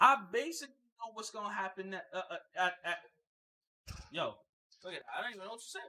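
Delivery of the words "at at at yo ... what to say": stuttering, stuck repeating the word at. A speaker complaining about movie trailers, suddenly stuttering. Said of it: "I'm stuttering right now".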